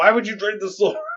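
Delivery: very high, shrill, furious screaming fit. Recounting a story where a character screams at the others, imitating someone screaming. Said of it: "He's like screaming at them".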